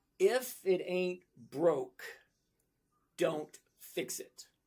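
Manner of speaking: every word drawn out, very slow and deliberate. Explaining a choice so the listener hears it, very slow delivery. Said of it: "I'm going to say it really slowly".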